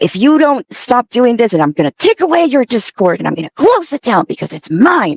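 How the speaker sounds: mock super upset, high, swooping, voice all over. Retelling what she said when she suddenly got upset: imitating someone super upset. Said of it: "she got super upset. She was like".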